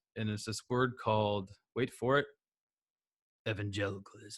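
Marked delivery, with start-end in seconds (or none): 3.5-4.4 low, gravelly, raspy voice on evangelicalism. Announcing a word after saying wait for it, low, raspy voice on evangelicalism. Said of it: "Got to do it like that low, raspy voice".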